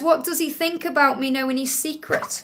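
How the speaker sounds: ordinary talk, nothing marked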